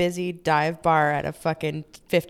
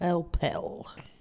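deeper, put-on Russian accent voice; 7 dB quieter than usual. Trying out a russian accent after an australian one, deeper put-on russian voice. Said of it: "I just said it kind of in a deeper voice".

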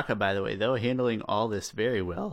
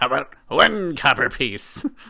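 very loud, put-on pirate voice; 4 semitones higher, 9 dB louder than usual. Retelling a character bargaining with a pirate, in a piratey voice. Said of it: "he like puts on a piratey voice".

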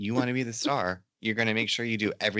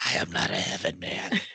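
weird, odd put-on old man voice. Retelling how a possessed person spoke, in Bill's weird old-man voice. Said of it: "She gets this weird voice".

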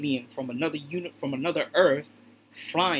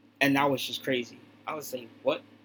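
ordinary talk, nothing marked

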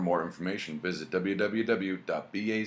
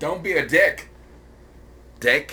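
very loud, drawn-out put-on voice, high and slow; 9 semitones higher, 10 dB louder than usual. Joking with the others about a social contract: Kennedy voice. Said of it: "I'm stuck in Kennedy voice".

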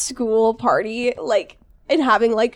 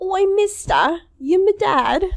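silly put-on British accent, pitched up; 8 semitones higher than usual. Joking around for listeners, putting on a mocking british accent. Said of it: "make fun of people's silly accents".

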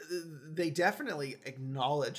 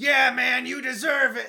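very loud, very high-pitched excited cheer; 10 semitones higher, 10 dB louder than usual. Retelling a crowd shout heard in the movie: Adam Sandler's normal voice. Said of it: "with his normal voice".

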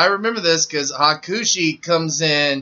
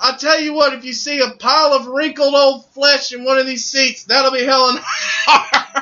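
mocking, needling ringside commentator voice, high pitch; 9 semitones higher than usual. Retelling a commentator's insult: imitating Jerry Lawler. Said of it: "and he goes".

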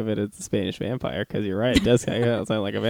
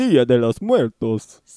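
loud Spanish narrator voice with vampire flavour; 7 dB louder than usual. Asked to say Day of the Dead in Spanish: Spanish vampire narrator voice. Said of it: "That's my Spanish vampire, a.k.a. the Spanish narrator".

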